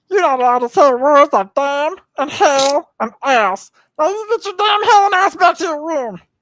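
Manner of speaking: very high, loud, belted cartoon voice. Doing a quoted line from a cartoon after promising an impression: Meatwad impression. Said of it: "I just have the one Meatwad quote that I do".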